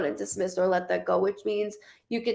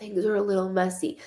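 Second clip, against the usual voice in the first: quiet whispering. Retelling what a woman across the table told them, whispering. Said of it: "the way that she's whispering".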